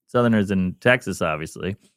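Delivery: normal talking voice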